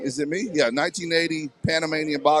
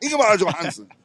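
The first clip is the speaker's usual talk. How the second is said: name rattled off fast in one go; 4 semitones higher than usual. Advising that when in doubt about a name, just say it: name said fast. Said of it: "just say it fast".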